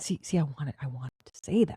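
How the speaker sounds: low, hushed whisper under the breath. With a woman nearby who might hear this, whispering. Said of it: "I don't know why I'm whispering".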